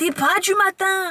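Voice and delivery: very high, very slow, drawn-out shout. Retelling how their instructor used to talk to them, imitating a yelling instructor. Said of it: "Pourquoi il criait?".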